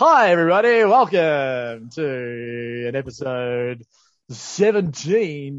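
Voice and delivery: put-on radio announcer voice. Opening a podcast episode, greeting listeners in a radio voice. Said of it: "putting on his radio voice".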